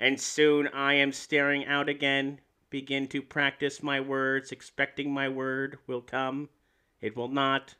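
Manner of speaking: mechanical, flat, slow robot voice. Reading a passage aloud after deciding to do it in a robot voice. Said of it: "should I read it in a robot voice".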